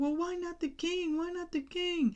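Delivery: high-pitched, mock skeptical, doubting voice.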